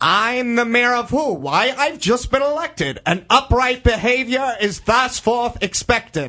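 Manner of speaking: high, cartoonish character voice. Asked by the host to do his line again, he reprises his role: cartoon Mayor of Who voice. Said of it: "You've got the cartoon voice totally there".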